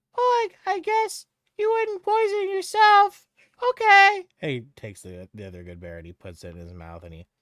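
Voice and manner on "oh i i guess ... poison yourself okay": put-on very high, very loud young boy's voice. Voicing the child taking a berry: child character voice. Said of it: "and he's like".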